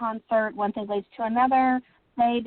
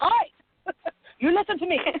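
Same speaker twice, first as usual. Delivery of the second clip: put-on pitched-up Scottish accent; 8 semitones higher than usual. Author voicing a character who appeared in his head, Clive's Scottish accent. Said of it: "I can hear him in his Scottish accent".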